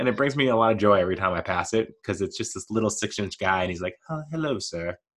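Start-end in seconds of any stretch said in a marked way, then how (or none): 4.1-5.0 soft, high put-on British butler-style accent. Describing a little penguin doorstop and voicing it: British penguin voice. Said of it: "he's British".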